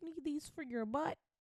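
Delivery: put-on high, soft little boy voice. Recalling a video of a little boy, imitating the little boy's voice. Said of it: "little boy voice".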